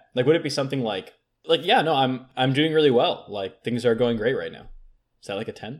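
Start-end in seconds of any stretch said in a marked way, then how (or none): none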